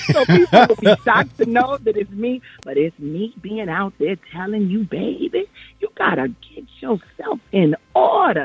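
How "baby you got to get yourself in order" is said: put-on slow, swooping elderly old lady voice. Showing the voice used for commercials, in an old lady voice. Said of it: "I'm an old lady on a lot of commercials".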